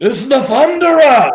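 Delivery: very high, loud, shouted orc yell. Voicing an older orc who spots Clickbait among the players: older orc yelling. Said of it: "looks at Clickbait and yells out".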